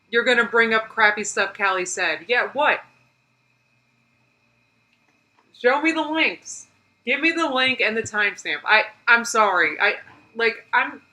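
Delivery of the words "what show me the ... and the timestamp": heated, fed-up, agitated, worked-up tone. Reacting to a crappy apology, demanding links as proof: agitated. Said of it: "I'm, like, getting agitated".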